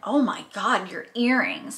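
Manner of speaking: put-on, slow, judgmental, judgy gush. Speaker imitates people commenting on her fake earrings, mimicking a judgy tone. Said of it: "but like in a judgy tone".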